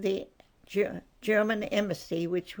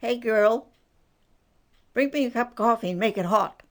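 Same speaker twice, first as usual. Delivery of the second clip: put-on hoarse woman's shout, higher and louder; 3 semitones higher, 6 dB louder than usual. Retelling a woman at the counter calling to the waitress, in a loud hoarse voice. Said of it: "she had a very hoarse voice and loud".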